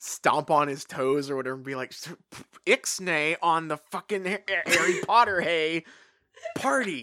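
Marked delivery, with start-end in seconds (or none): 1.9-7.0 menacing tone, tripping and stumbling over words. Imagining a scene where Snape has to menace Hagrid: imitating Snape menacing Hagrid. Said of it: "having to menace Hagrid".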